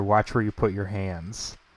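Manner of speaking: low, soft half-whisper close to the ear. Role-play player half-whispering into another character's ear, half-whispering. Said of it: "I whisper in Henry's ear".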